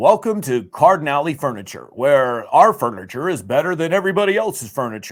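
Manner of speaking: big, loud, put-on radio announcer voice. Recalling recording a furniture store ad in the studio, radio announcer voice. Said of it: "my radio voice would come out".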